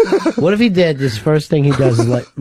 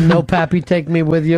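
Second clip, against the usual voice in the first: ordinary delivery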